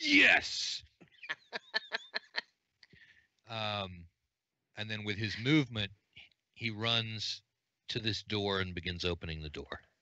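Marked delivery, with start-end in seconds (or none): 0.0-0.8 high, loud triumphant yes cheer.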